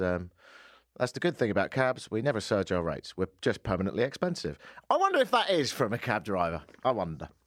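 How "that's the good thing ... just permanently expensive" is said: ordinary talk, nothing marked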